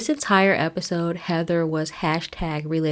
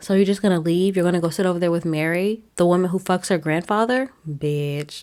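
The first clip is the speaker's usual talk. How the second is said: normal talking voice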